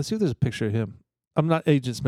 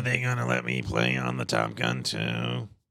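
very low, rough croak; 6 dB quieter than usual. Joking about Top Gun two after others note his throat cancer: Val Kilmer impression. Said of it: "That was my impersonation of Val Kilmer".

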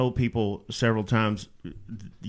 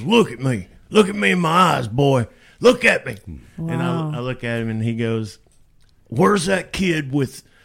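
put-on rough-talking old country boy voice, higher, louder; 4 semitones higher, 7 dB louder than usual. Retelling a producer friend's pep talk during a panic attack: rough-talking old country boy voice. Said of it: "he's this rough talking old country boy".

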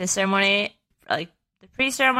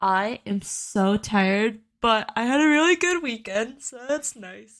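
speaking while yawning; 3 semitones higher than usual. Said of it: "I'm sorry I'm yawning".

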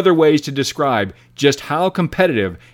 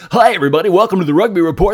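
put-on on-air radio DJ announcer voice; 4 semitones higher, 3 dB louder than usual. During a rugby podcast sound check, a host tries a hot hits radio voice. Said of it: "This is my hot hits radio voice".

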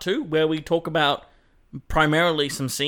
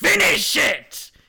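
put-on hammy, very high-pitched villain scream; 11 semitones higher, 3 dB louder than usual. Retelling a movie scene where the Green Goblin bursts in: Green Goblin yelling. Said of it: "he's just yelling".

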